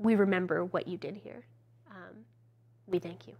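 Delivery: hushed whisper. A storyteller voices a tiny rat beckoning the listener closer, whispering. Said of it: "which sort of whispers to you".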